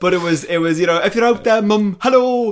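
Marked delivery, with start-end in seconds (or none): 1.0-2.5 terrible fake Welsh accent, much higher. Sending a hello to their mum sitting at home, in a terrible Welsh accent. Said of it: "I'm doing a terrible Welsh accent".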